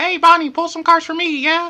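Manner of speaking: very high, loud, squeaky voice. Showing viewers how to ask for a card reading: little Mickey Mouse voice. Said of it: "with the little Mickey Mouse voice".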